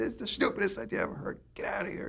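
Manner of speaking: seething, breathy, whispered furious outburst. Retelling how he reacted to the writers' pitches: imitating himself exploding in anger. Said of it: "I would always just go through the roof".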